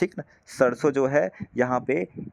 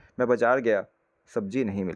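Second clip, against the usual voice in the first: brief pause after गया; 2 semitones lower than usual. Teaching comma use with an example sentence, short pause after गया. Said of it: "थोड़ा सा रुक के बोलेंगे".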